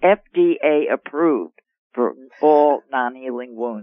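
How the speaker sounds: deliberately slow. Describing a treatment found through a doctor, said slowly. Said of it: "I like to say that slowly".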